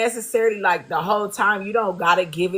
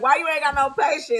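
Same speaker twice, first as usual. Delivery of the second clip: play-acted amused speech, said through laughter; 6 semitones higher than usual. Retelling her reply after being caught reading: imitating someone laughing. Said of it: "And she fell out laughing".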